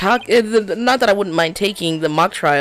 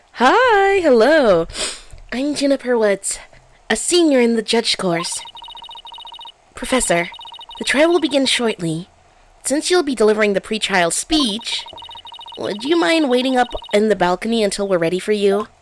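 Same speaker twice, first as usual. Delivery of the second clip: high-pitched, lifted character voice; 5 semitones higher than usual. Voicing a senior student greeting the professor before a trial, Juniper Woods higher-pitched voice. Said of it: "She had a higher pitched voice".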